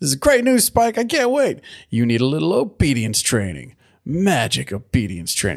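gushing, excited, swooping delivery. Retelling a scene about catching Cerberus: imitating an excited voice. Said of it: "And she's all excited".

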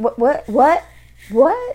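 nervous stutter on "what". Describing how people act when they start lying, mock stuttering. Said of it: "They stutter when they talk".

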